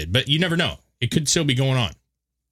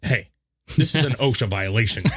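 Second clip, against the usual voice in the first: normal talking voice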